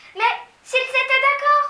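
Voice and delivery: very high, very loud, urgent, pressing cry. A child answers an adult's objection; urgent exclamation. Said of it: "s'écria Mathilda d'un ton pressant".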